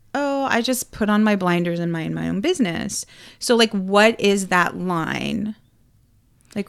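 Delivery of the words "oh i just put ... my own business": normal talking voice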